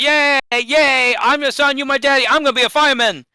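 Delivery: put-on very high-pitched small child voice. Recalling an Aqua Teens episode, doing the Mini Shake little-child voice. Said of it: "He he sounds like a little child".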